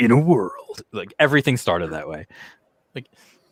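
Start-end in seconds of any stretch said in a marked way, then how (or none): 0.0-0.8 movie trailer narrator announcer voice. Recalling how every movie trailer started: Don LaFontaine trailer voice. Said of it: "the narrator, uh, Don LaFontaine, who did all the trailers".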